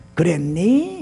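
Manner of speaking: gentle rising Seoul intonation. Gyeongsang dialect speaker demonstrating how to end sentences, soft Seoul-style rising ending. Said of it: "끝을 좀 올려요. 서울 사람은 아니지만은".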